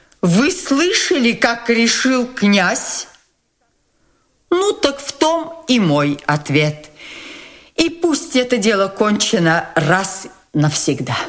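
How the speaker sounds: commanding, ceremonial, imperious, solemn tone. Nastasya Filippovna addresses Gavrila Ardalionovich about the prince's decision: imperious and solemn. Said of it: "властно и как бы торжественно обратилась она к нему".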